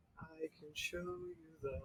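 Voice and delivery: hushed voice. In a tabletop game, a player's character speaks mid-air, very quiet. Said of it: "I'm just very quietly like".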